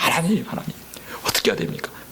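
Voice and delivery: low, soft, desperate whisper.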